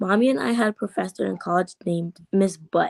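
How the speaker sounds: plain reading voice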